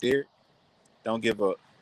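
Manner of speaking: sweet, coaxing, encouraging tone. Quoting the woman who challenged him not to give up: imitating her sweet voice. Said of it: "Just in that sweet voice".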